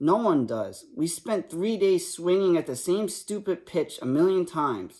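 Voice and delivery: ordinary talk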